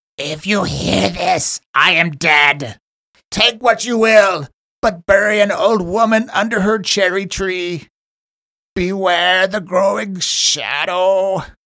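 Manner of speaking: put-on loud, high, eerie old hag voice, "shadow" drawn out. The narrator voices a message all the players hear, in a creepy hag-like voice. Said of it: "this really creepy hag-like voice".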